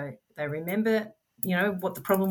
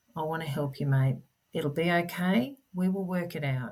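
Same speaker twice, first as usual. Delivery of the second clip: put-on soft, gentle, reassuring voice. Describing how they calm him when he's screaming, imitating own gentle, soft voice. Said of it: "gently, softly".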